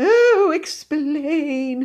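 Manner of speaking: fervent, very high-pitched pleading tone. Narrator voicing Cousin Mildred answering William's ghost act, pleading ardently. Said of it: "she pleaded ardently".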